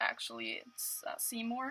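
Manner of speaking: slow, hushed, barely audible whispered mutter. Retelling a correction made while holding a cup of lemonade: retelling a mutter under breath. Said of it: "under my breath".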